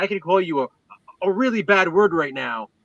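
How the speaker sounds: put-on yelling. Retelling a comedy scene where Kramer yells at Leon: imitating Kramer yelling. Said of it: "he's yelling at the character Leon".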